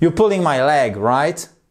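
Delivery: voice rises on the word right. English lesson on tag questions, rising intonation on right. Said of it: "Vous remontez comme ça".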